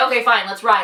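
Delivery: normal talking voice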